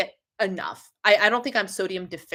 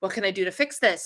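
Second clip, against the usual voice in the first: put-on frantic, panicked voice. Retelling own reaction on getting on the scale: imitating own frantic panic. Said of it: "Panic, panic, panic, frantic, frantic, frantic".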